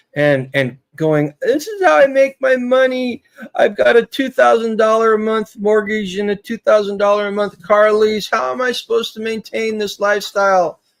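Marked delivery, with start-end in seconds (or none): 1.4-10.7 mock blubbering, high sob-laced crying whine. Mocking people who melted down, imitating them crying. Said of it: "a grown person crying and going".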